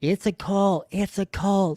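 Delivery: put-on scream, high and held in, mild yell. Retelling being grabbed on the sidewalk, imitating own screaming. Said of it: "I'm screaming it".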